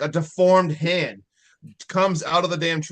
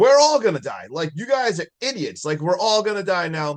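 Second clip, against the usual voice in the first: mock livid, irritated, very angry ranting outburst; 3 semitones higher than usual. Retelling a movie scene where a character is pissed: imitating someone super pissed. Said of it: "Super pissed".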